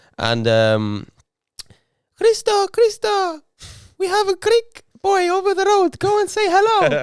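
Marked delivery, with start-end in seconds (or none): 2.2-7.1 put-on very high, slow Greek grandmother voice. Retelling what his greek grandma says, imitating grandma's voice. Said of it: "That was an impression of my grandma".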